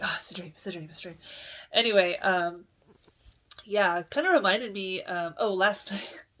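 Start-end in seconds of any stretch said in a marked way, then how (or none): 0.0-1.2 frantic, rattled-off, rushed and soft muttering. Speaker retelling waking up from a bad dream, retelling freaking out. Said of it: "I woke up like freaking out".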